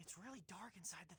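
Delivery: speaking in a whisper. Whispering in a dark movie theater scene. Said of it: "Why are you whispering?".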